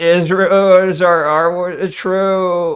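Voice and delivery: slowed-right-down, slow-motion, dragged-out drawl. Imitating a clip that seemed slowed down: imitating Asmon in slow motion. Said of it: "it sounds like he's going in slow motion".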